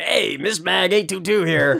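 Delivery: weird, high-pitched, creaky voice. Remembering a YouTube magician from childhood: imitating his weird voice. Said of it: "he had this weird voice".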